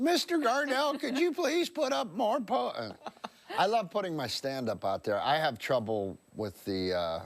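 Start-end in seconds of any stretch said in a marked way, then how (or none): 0.0-2.7 put-on squeaky kid voice, higher pitch. Imitating someone who works social media asking for more posts: squeaky voice kid from The Simpsons. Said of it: "like that squeaky voice kid in The Simpsons".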